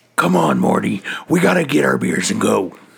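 badly done rough, croaky, creaky cartoon character voice. Joking about the show Rick and Morty: terrible Rick voice. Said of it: "my fucking Rick voice is terrible".

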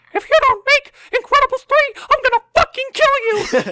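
very high, loud cartoon mouse voice. Retelling how a cartoon mouse held a Keyblade to their throat: Mickey Mouse voice. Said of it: "You have a really good Mickey Mouse".

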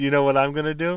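words spoken while chuckling. Retelling what he said while drunk at a hotel, with a chuckle. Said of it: "You said it with a chuckle".

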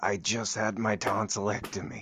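speaking in a whisper. In an improv scene during a huddle, a character speaks in a whisper. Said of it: "I can only speak in a whisper".

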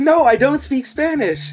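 high-pitched, slow, exasperated tone.

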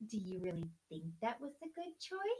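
play-acted, soft, falsely sweet parental tone. Describing certain parents, imitating a fake-nice parent voice. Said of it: "will say something in a nice voice, but, like, with that smile".

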